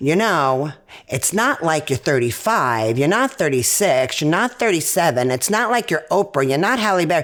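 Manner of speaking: ordinary delivery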